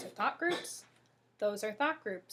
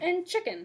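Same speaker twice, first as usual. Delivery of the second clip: pitch steps down at the end of chicken; 8 semitones higher, 5 dB louder than usual. Intonation lesson, last item of a spoken list: falling pitch on chicken.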